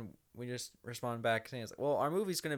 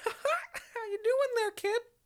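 put-on, very high, loud cartoon mouse voice; 6 dB louder than usual. Joking about Disney knocking on the door: Mickey Mouse voice. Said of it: "I tried to do a Mickey Mouse voice".

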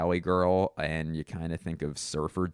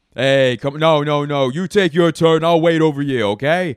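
combative, gruff, very loud New York accent; 8 semitones higher, 12 dB louder than usual. Showing how people doing a new york accent sound, gruff confrontational new york accent. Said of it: "it sounds gruff and also confrontational".

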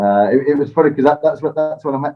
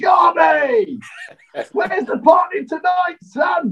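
high, bellowed shout. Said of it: "he shouts down".

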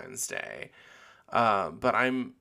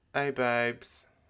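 attempted British accent. Retelling how a British girl met at a bar greeted her, imitating a British accent. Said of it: "I can't even sound as cool or British as she did".

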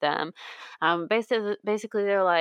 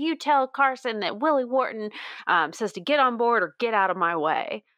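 light, slight Southern twang; 3 semitones higher than usual. Retelling what he says getting back in the car, in a slight southern twang. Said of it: "I love that little southern twang you brought into".

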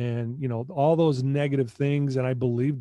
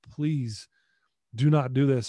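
put-on tearful, begging plea. Retelling how they begged a coach not to take a scholarship: retelling a tearful plea. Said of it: "started to cry and I got on my knees and literally begged".

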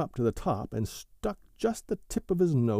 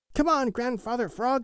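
very high, eager, calling-out cry; 12 semitones higher than usual. Narrator voices Billy Mink calling to Grandfather Frog, crying out. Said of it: "cried Billy Mink".

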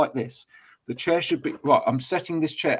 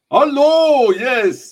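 bad put-on Dutch accent, much higher and louder; 10 semitones higher, 10 dB louder than usual. Describing people in Dutch offices, imitating how they greet you: bad Dutch accent. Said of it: "Was that like meant to be Dutch?".

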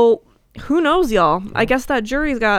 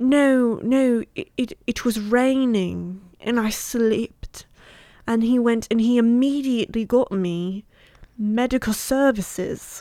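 put-on British accent, very slow. Retelling a Kate Moss testimony, imitating Kate Moss with British accent. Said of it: "she really sold that British accent".

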